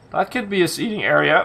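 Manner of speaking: voice breaks and cracks partway through. Planning a seating area out loud, the speaker's voice cracking. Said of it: "that was my voice cracking".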